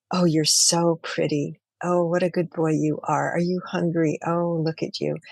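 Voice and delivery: soft, gentle voice. Speaker shows how she talks to the hummingbirds so they stay, talking in a soft voice. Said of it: "I'll just say it in that voice".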